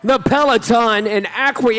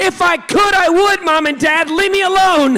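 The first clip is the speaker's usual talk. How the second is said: put-on acted, high, hollering child voice; 6 semitones higher than usual. Retelling a boy answering his mom's yelling during a race: retelling a kid yelling back. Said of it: "he yells back".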